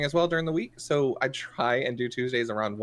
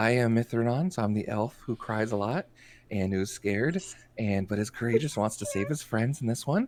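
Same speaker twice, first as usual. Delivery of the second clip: whispered speech; 3 semitones lower than usual. Introducing their elf character on stream, whispering. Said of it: "I'm gonna whisper my announcements today".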